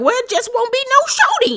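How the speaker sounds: very high, sing-song, swooping reality-show voice. Retelling a castmate's answer in the car: Tiny voice. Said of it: "this Tiny voice".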